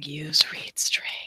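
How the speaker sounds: hushed, breathy whisper under the breath. Voicing what everyone watching the live stream is saying: imitating people whispering. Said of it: "Everyone's just whispering".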